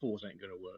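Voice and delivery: hushed, very quiet half-whisper. Leaning over to half-whisper into his son's ear, half-whispering. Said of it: "I'm just gonna lean over and whisper to him".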